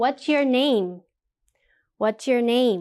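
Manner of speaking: pitch drops at the end on name. A teacher demonstrates information questions for grammar practice, falling intonation. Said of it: "It goes down a little bit".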